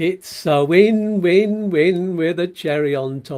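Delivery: very slow, stretched-out, drawn-out delivery. Video host addressing viewers, saying it slowly. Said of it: "I'm saying that slow".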